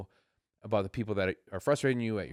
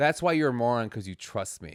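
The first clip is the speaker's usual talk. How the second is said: usual speaking voice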